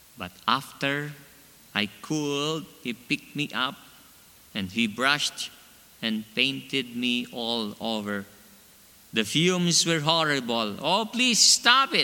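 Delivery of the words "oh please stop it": begging cry shooting way up in pitch. Narrator reading the first-person character's line while being painted, crying out. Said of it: "I cried".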